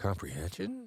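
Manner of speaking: curious rising tone on "comprehension". Teaching tone of voice, the speaker demonstrates a curious rising tone. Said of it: "That's curiosity?".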